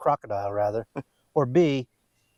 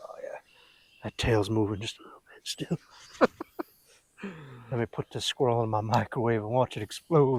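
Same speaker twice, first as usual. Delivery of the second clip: creepy put-on serial-killer voice, quieter; 4 dB quieter than usual. Mocking the other speaker's remark about a worm: Jeffrey Dahmer voice. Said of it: "Sounded like Jeffrey Dahmer when you said that".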